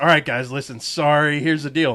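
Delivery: ordinary delivery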